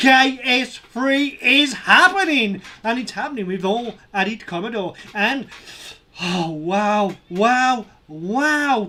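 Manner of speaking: loud, thrilled, excited, with drawn-out "wows". Reacting as the fundraiser passes its goal: so excited. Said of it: "I am so excited".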